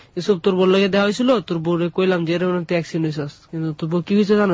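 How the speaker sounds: ordinary talk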